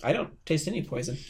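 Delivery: ordinary delivery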